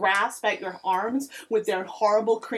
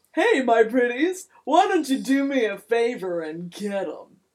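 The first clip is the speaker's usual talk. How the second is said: loud, booming, disembodied-sounding voice; 4 dB louder than usual. Narrating a scene, a disembodied voice from the branches calls out: booming voice. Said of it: "The disembodied voice booms".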